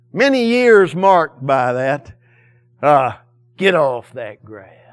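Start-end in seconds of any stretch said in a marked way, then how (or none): 3.6-4.7 perfect, deep contralto delivery. Retelling a woman watching her grass from the window, imitating her contralto voice. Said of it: "in a perfect contralto voice".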